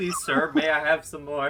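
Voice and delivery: ordinary talk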